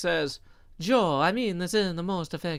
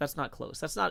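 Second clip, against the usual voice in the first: ordinary delivery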